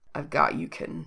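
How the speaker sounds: rough, quiet murmur. Reading Jack's line to Reese during an intimate scene, in Jack's low rough voice. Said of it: "Jack's voice sounds low and rough".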